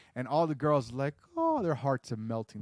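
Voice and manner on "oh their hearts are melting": ordinary talk, nothing marked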